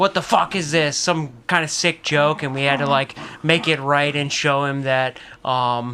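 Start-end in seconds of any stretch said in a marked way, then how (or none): 0.0-2.4 put-on irate, indignant, angry outburst. Retelling how a customer yelled about a burrito: imitating a customer yelling. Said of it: "yelling at the".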